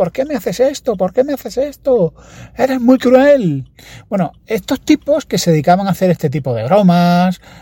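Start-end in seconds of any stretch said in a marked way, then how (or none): 0.0-3.7 mock heartbroken child's scream, much higher pitch. Retelling a prank where a child is fooled, imitating a child screaming. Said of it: "el niño gritaba cosas que te rompían el corazón".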